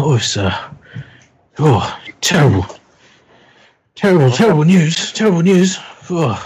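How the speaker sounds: anxious, nervous chattering speech. Voicing the cab driver for the players, nervous talking. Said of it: "he just starts nervously talking".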